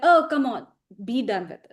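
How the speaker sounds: ordinary talk, nothing marked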